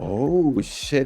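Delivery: pleasantly surprised. Voicing a character reacting to the secret handshake: happily surprised. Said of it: "surprised, but, like, in a happy".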